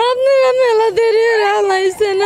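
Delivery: tearful, sobbing, crying pleading tone.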